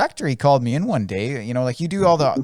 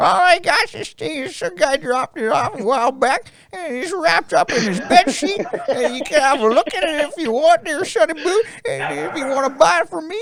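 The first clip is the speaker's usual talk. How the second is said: very high-pitched, put-on little old lady voice; 14 semitones higher than usual. Retelling what a shop lady said: imitating an old lady voice. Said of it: "She's a fantastic old lady voice".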